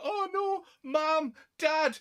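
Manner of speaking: very slow, very stretched-out, high yell. Retelling how a priest ran outside after a car blew up, imitating someone shouting. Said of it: "he's shouting fucking mom and dad".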